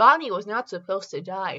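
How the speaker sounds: ordinary delivery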